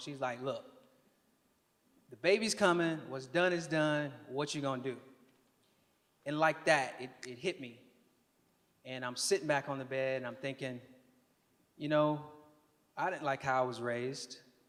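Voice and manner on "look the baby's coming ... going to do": mock no-nonsense, blunt, plain-spoken, matter-of-fact tone. Retelling what a big sister said on the phone: imitating a matter-of-fact, no-nonsense tone. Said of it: "in a very matter-of-fact, no-nonsense kind of tone".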